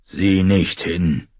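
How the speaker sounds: rough, growling voice. Narrator reads an old man's order to Arya, in a rough growling voice. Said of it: "knurrte eine raue Stimme".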